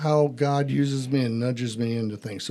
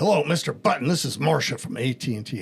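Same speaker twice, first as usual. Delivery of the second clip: put-on authoritative, commanding voice. Retelling a phone call from a caller: imitating an authoritative voice. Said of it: "She had very authoritative command".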